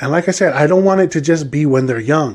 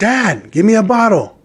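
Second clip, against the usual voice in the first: put-on sassy, high, drawn-out, demanding kid voice; 6 semitones higher than usual. Retelling a child's demand for a bottle: imitating a child yelling. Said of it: "Or she'll yell".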